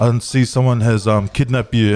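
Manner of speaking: usual speaking voice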